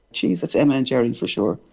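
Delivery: normal talking voice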